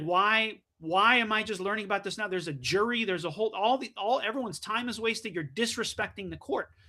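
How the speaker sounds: normal talking voice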